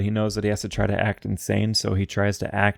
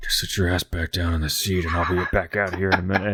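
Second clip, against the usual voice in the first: muttered quietly; 2 semitones lower than usual. Recounting a scene, imitating Orson Welles mumbling in her direction. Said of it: "mumbles to her like in her direction".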